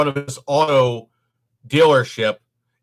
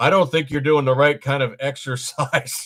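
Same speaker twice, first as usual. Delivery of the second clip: play-acted perfectly deadpan, dry, flat, expressionless delivery. Retelling an older guy's reply to a room laughing, imitating him perfectly deadpan. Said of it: "perfectly deadpan goes".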